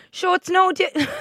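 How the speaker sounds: really bad put-on Kerry accent, pitched way up. Quoting a man who has a Kerry accent, the speaker does a really bad Kerry accent. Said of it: "I'm about to do a really bad Kerry accent".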